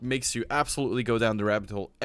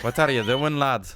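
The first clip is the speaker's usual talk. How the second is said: put-on Irish leprechaun voice; 3 semitones higher, 4 dB louder than usual. Asked for Scottish, the speaker falls back on an Irish leprechaun voice. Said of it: "How do Scottish do they talk like this".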